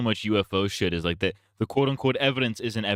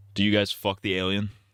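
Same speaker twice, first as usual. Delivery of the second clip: ordinary talk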